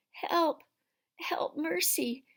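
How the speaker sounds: weak, feeble, faint, high cry. Reading a story, the witch staggers after Polly and Diggory crying out, faint voice. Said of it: "cried the witch in a faint voice".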